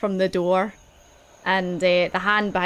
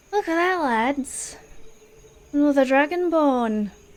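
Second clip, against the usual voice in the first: high, cackling villain voice; 7 semitones higher than usual. Game master voices a hidden attacker taunting a dragonborn: cackling hidden voice. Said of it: "a voice cackles from inside and is like".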